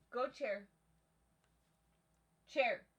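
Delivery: shouting. Calling a cat over to the chair, told not to: yelling. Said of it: "Meek, you don't have to yell".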